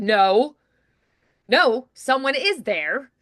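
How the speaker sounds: convinced, firm, very slow and certain delivery. Demonstrating how to deliver a line with more confidence: firm and convinced. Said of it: "but then you're like".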